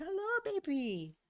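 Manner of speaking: very high-pitched voice. Greeting a cat that just made a noise, in the highest-pitched voice. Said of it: "in my most high pitched voice".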